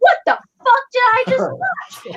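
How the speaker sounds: furious swearing outburst. Retelling swearing in the theater after seeing The Last Jedi, retelling angry cursing. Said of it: "cursing in the theater".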